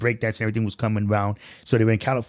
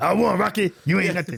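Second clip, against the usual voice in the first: put-on tough boxer voice, higher pitched; 8 semitones higher than usual. Doing a Mister T impression while recalling a boxing movie: Mister T voice. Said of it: "that was my Mister T impression".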